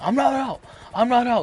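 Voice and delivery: acted-out, high, furious, angry shout. Retelling the batter he struck out protesting, retelling an angry yell.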